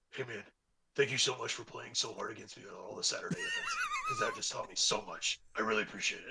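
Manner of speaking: easygoing, animated, swooping, friendly and grateful. Retelling what a player said after the game: imitating Nick. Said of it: "a Nick impression".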